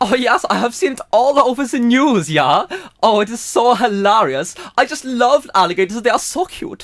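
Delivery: put-on German-accented character voice. Playing a character in a sketch, put-on German accent. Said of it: "So now we're going to go with German".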